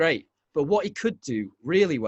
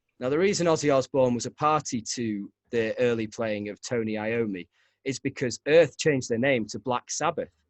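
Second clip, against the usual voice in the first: normal talking voice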